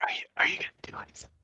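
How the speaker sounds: put-on character voice, whispered. Voicing Nora asking Beans if they'll act: whispering in character. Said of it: "whisper to Beans".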